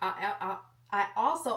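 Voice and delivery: stuttering. Describing newly bought clothes to the camera, stuttering. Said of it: "I'm stuttering".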